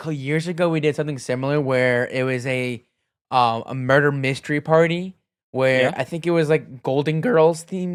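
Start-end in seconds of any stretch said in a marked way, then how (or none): 6.5-8.0 cracking, breaking voice. Recalling a themed murder mystery party from years ago, voice cracking. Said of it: "voice crack".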